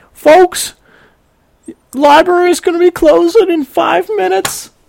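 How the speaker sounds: very high, flustered, panicky loudspeaker announcer voice. Retelling a story, the speaker voices a woman on the library loudspeaker, imitating a panicky announcer. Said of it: "she's kind of panicky".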